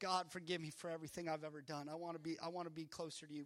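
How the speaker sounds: mock weepy sobbing, bawling. Retelling praying at the altar as a twelve-year-old: retelling own tearful prayer. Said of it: "I'm just sitting there bawling, boo-hooing".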